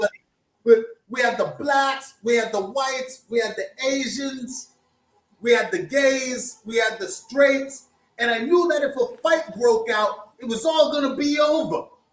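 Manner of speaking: put-on crazy New York street accent. Retelling how Frankie described the crowd that night, in Frankie's crazy New York accent. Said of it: "he has this crazy New York accent".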